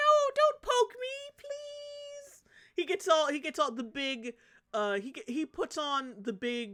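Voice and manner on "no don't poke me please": very high, very slow, pitiful pleading tone. Retelling the cat suddenly switching tone with the doctor: imitating a cat pleading. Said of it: "he immediately switches up his tone".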